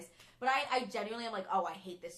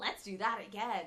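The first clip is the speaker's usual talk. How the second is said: excited put-on cartoon donkey voice. Quoting a scene from Shrek One: Donkey voice. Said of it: "and then Donkey's like".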